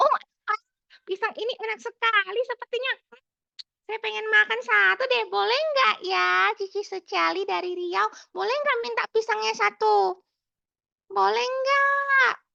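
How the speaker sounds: very high, creaky, cheerful, playful monkey voice. Storytelling example of a cheerful monkey wanting a banana, cheerful monkey character voice. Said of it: "seekor monyet yang periang".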